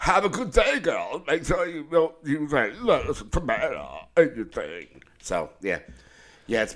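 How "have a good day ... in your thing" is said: straining, effortful voice. Retelling talking while driving to the play place: John Travolta voice. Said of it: "like if John Travolta had to take a shit".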